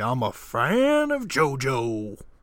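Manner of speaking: loud, very slow, swooping, with fan stretched out. Comparing a devoted hanger-on to a film role, Al Pacino impression. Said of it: "He's like Al Pacino in The Devil's Advocate".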